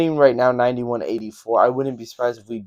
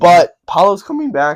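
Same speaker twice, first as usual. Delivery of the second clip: high, loud, breaking, cracking voice; 6 semitones higher, 8 dB louder than usual. Discussing team injuries, saying a player is coming back: voice cracking. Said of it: "I voice crack".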